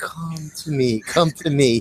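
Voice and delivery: put-on seductive voice. Describing a favorite film scene, the speaker mimics a woman's vision calling: imitating an alluring call. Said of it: "She's like very alluring".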